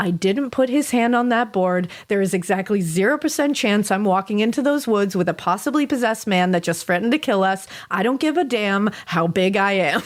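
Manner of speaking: usual speaking voice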